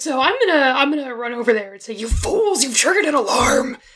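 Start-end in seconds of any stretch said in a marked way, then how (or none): 1.9-3.8 intense, fierce, urgent whisper. In a game, the speaker's character runs over to the group: intense whisper. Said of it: "In my most intense whisper".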